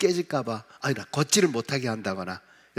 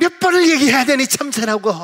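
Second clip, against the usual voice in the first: very high, very loud, shrill fed-up exasperated scolding; 12 semitones higher, 9 dB louder than usual. Acting out a short-tempered mother asked the same question again: short-tempered mom's raised tone. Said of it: "성질 급한 엄마는 목소리 톤이 바뀌어지기 시작하죠".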